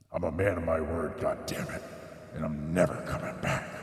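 breathy, whispered, under the breath. The speaker retells what a man said about leaving; Vince voice. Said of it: "Let me do it in the Vince voice".

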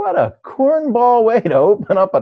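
high, loud, scornful scoffing.

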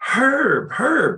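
high, loud, excited calling out.

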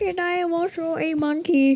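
very high, put-on monkey character voice. In a game of auditioning character voices, giving a monkey character voice. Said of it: "Give me a character voice".

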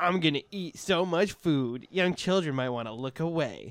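lazy cartoon cat voice done all wrong. Discussing how to voice Garfield, speaker shows a wrong Garfield voice. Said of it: "that's not how Garfield would talk".

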